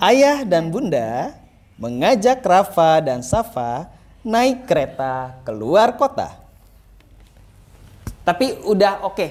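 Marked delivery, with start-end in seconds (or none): 0.0-6.3 relaxed, very slow, sing-song, pausing between phrases. Coaching a reading aloud, the line is done relaxed, with pauses between phrases. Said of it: "agak santai tapi. Agak dijeda. Misal gini ya".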